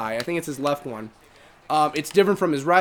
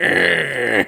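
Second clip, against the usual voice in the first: louder vulture character impression. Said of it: "the way that South Park portrayed him. As, like, a vulture".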